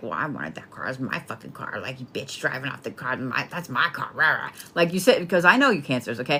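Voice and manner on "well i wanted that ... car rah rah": sulky, pouty, put-out, mad grumbling. Acting out a buyer whose wanted car someone else just bought: imitating a pouty, mad complaint. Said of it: "You're, like, pouty, right? You're like".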